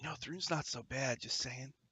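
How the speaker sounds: close, hushed imp voice in a half-whisper. The narrator voices an invisible imp speaking into a character's ear, half-whispering imp voice. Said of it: "the imp's voice whispers in your ear".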